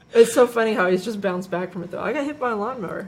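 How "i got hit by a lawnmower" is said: casual, offhand, tossed off like nothing. Retelling how a little boy talks about his accident: imitating a boy's casual mention. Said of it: "casually mention it".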